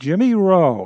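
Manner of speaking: very loud, high tenor voice. Retelling a man at a bar calling out to the speaker, Billy's loud tenor voice. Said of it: "in his loud uh, tenor voice".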